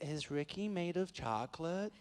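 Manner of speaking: put-on soft California Valley Girl accent. Retelling what a kid whispered to his girlfriend, in a valley girl accent. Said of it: "My my go-to accent is always Valley Girl".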